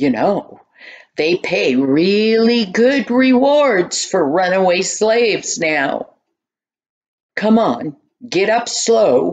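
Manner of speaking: rough, gruff, growling soldier voice. Reading a story, as a soldier holding a spear to a runaway's neck, in a gruff, growly voice. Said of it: "a gruff, growly voice said".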